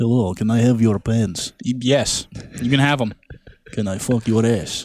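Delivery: imitated Russian accent. Joking about Russians, mimicking them in a Russian accent. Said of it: "Russians are just like".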